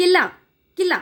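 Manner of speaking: quick, jerky, abrupt pronunciation. Showing how to say simple words in front of children, said quickly and abruptly. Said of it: "इसको जल्दी बोलना है आपको, अचानक से और झटके से".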